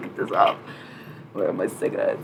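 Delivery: put-on whispered with German accent, under breath. The speaker relays what Nico said on waking up: imitating Nico in a German accent. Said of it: "I've perfected my German accent".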